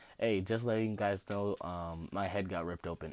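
ordinary talk

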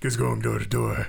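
very low, deep, put-on caped superhero voice. Speaker answers someone during a role-play bit, in a Dark Knight voice. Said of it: "This is how Dark Knights talk".

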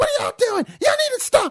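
very high, shrill, up-and-down swooping yell. Retelling a woman screaming at her kids while looking at the speaker, retelling a scream. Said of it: "she's screaming".

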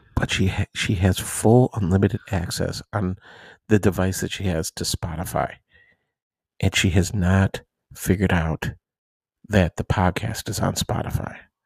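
hushed whisper, low and quiet. Sharing a secret that a daughter might overhear: whispering. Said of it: "I'm gonna whisper this".

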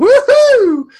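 high, loud, excited whoop. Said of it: "And I'm like".

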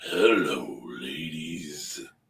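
very deep, put-on raspy voice. After being told his voice is raspy today, playing it up in a raspy voice.

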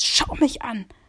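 loud, barked, really shouted. Retelling how he shouted at the speaker to look at him, imitating the shout. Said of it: "hat er mich richtig angeschrieben".

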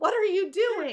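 sky-high, shrill shriek at full volume. Retelling a scene where a ceramic statue is smashed: imitating David yelling. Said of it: "As David yells out".

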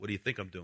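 very quiet muttered delivery with attitude. Retelling a parable, voicing the first mason: acting a mason with attitude. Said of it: "kinda like with an attitude".

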